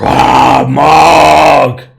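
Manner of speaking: very loud, rough, raw giant war cry, stretched. Voicing a fire giant charging at the players: fire giant yelling. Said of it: "this fire giant just yells".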